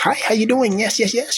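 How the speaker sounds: high, bright, polite voice.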